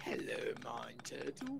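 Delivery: rough, low, creaky sing-song voice with big swoops. Quoting a favorite cartoon character's greeting: Mind Turtle voice. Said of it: "that was spot on".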